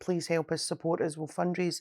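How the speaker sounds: ordinary delivery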